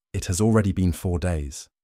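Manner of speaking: ordinary delivery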